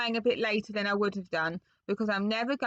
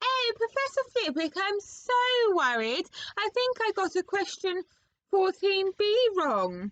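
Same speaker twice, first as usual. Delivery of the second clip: very high falsetto put-on voice; 10 semitones higher than usual. Reading a story character's pretend excuse to a professor, in a put-on high voice. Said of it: "he put on a high voice".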